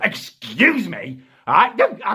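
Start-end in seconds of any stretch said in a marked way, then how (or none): 0.0-1.2 mock hostile, aggressive, confrontational delivery. Retelling a fridge encounter with a woman: imitating an aggressive woman. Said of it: "She looks at me in an aggressive manner and she says".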